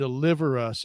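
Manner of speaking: normal talking voice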